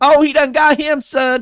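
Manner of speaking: very high, loud hollering shout. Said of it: "Just yelling at the fucking screen".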